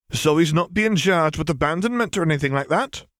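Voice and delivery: wary, probing, suspicious, high-pitched rising tone. A woman questions another woman's reassurance to a man; suspicious question. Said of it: "Asked Fiona suspiciously".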